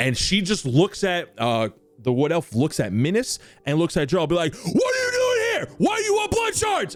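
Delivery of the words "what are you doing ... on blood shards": very high, all-out, full-lunged screaming shout. Game master voicing a wood elf trying to intimidate the party, screaming at the top of her lungs. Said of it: "screaming at the top of her lungs".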